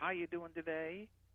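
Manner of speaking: Southern accent, pitch lifting at the end on "today". Describing how people in Georgia and Alabama ask questions, in a Southern rising pitch. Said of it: "always raising that pitch up at the top".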